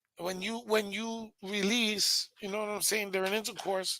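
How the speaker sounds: soft, strange put-on voice.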